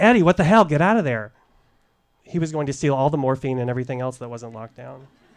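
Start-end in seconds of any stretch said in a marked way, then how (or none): 0.0-1.3 loud, frightened shout. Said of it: "I ran over yelling".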